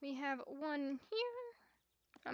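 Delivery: very slow, soft voice, cracking. Playing a horse game aloud, giving horses sugar cubes, voice cracking. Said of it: "My voice just cracked".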